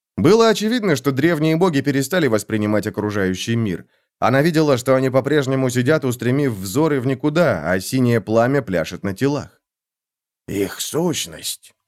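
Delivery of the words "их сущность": quiet, hushed, lower pitch. A trembling man watches the ancient gods burn in blue flame: said quietly. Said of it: "тихо произнес Буг".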